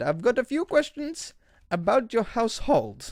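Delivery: clumsy put-on Indian accent. Retelling a phone call from a man asking questions, doing a bad Indian accent. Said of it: "I'm doing an Indian accent".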